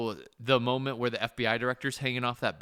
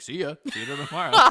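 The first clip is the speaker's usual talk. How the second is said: put-on Scottish accent, pitched higher; 4 semitones higher than usual. Retelling how Sean Connery left the set each night: Sean Connery impression. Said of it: "Even Sean Connery can't prolong his own accent".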